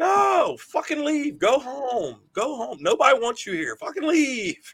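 very high, drawn-out hollering. Retelling running into the aisle at leaving fans: retelling yelling at fans. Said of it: "I just start yelling at 'em all".

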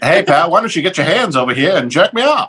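put-on old-timey fifties radio announcer delivery. Doing a comedy bit about old-school roommates: 1950s radio guy voice. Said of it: "Radio fifties guy".

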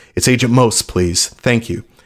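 usual speaking voice

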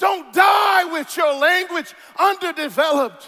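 passionate shouting. Speaker urging listeners to develop their gift before they die, yelling. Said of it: "I know I'm yelling".

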